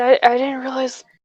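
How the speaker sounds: ordinary talk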